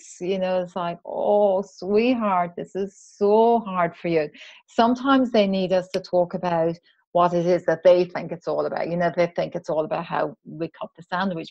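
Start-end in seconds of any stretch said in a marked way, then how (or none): 1.0-4.3 heartfelt, sympathetic, soothing tone, slow. Showing how to comfort someone who is upset, in a heartfelt, empathetic tone. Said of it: "using that really heartfelt, empathetic tone of voice".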